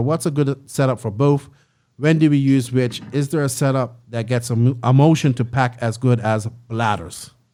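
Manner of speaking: ordinary talk, nothing marked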